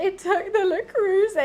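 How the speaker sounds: high, weepy, tearful voice, crying through the words. Retelling a phone call to dad after a robbery: imitating own past crying. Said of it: "on the phone to my dad crying".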